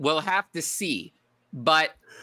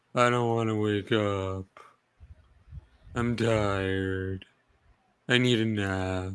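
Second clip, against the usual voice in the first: put-on cartoon donkey voice; 7 semitones lower than usual. After praising someone else's Eeyore voice, showing off their own, in Eeyore voice. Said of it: "That's my Eeyore voice".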